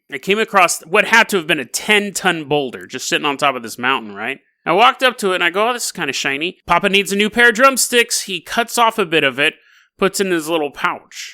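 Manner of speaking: ordinary delivery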